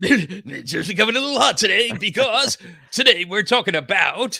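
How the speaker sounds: mock radio DJ announcer voice. Told they sound like a radio DJ, the speaker plays along in a mock radio DJ voice. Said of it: "You almost sound like a like a radio D J".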